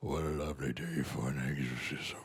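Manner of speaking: deep, low voice kept hushed. Performing a favorite line for someone, in the voice of the demon from The Exorcist. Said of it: "the voice of the demon from The Exorcist".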